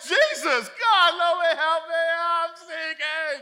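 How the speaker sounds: mock panicked cry, very high, very loud, drawn-out. Retelling the Bible story of Peter sinking, acting out Peter's panicked cry. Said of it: "if it's really like this".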